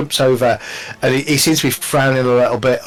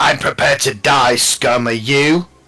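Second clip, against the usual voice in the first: snarling, growling voice. Voicing a foe pulling a dagger on a player character: snarling. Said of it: "He snarls at".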